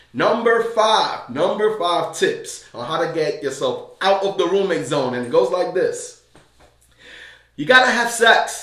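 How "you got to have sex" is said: blunt, a bit much, raised, pitched up, a little loud. Announcing tip number five for getting out of the roommate zone: said a little loud. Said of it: "I'm sorry I said that a little loud".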